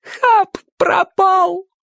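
very high, sudden exclaiming outcry. Narrator reads a young woman who runs up to him, exclaiming. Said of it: "воскликнула молодая женщина".

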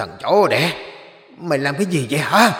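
deep, rough, low, hoarse shouting. Lan turns on the man who stuck a talisman on her head, deep hoarse shout. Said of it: "hét lên bằng cái tiếng giọng ồm ồm".

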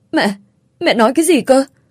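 high, stammering, stumbling and halting. A daughter drops her plate on hearing her mother's news of a hospital emergency, stammering. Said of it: "Giọng cô lắp bắp".

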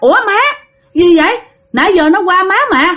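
high, startled cry of alarm. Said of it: "mẹ mới hết hồn".

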